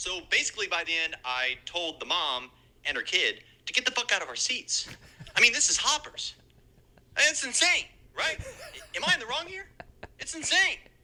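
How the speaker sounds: high, swooping, venting podcaster storytelling voice. A listener's impression played on the podcast: imitating Art Kai. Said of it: "as Art Kai, as podcaster Art Kai".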